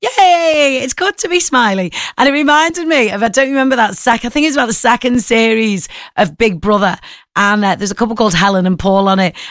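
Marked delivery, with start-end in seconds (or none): 0.0-1.9 bright, wide-grin smiling voice, pitched up. Speaker shows listeners how smiling changes the voice, in a smiling voice. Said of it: "Like if I start smiling now".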